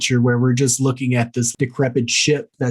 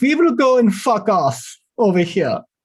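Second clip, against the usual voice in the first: high, bad fake Russian accent sliding into German; 9 semitones higher than usual. Describing a film scene, voicing the Russians' reaction in a bad Russian accent. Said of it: "That was German".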